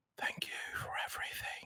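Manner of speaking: hushed, breathy, soft whisper close to the ear. Voicing a character who leans down to thank someone: whispering into an ear. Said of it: "lowers down and whispers into his ear and goes".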